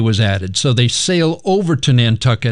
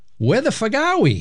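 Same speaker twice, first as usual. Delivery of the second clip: put-on Boston accent, much higher pitch; 9 semitones higher, 4 dB quieter than usual. Acting out confused sailors asking each other, in a boston accent. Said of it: "say it with a Boston accent".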